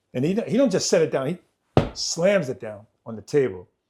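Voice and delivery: ordinary talk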